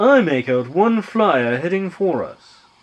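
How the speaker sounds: put-on British English with a Japanese accent. Performing a character's line after being asked for a british japanese accent: british japanese accent. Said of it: "British Japanese".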